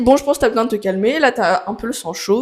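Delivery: normal talking voice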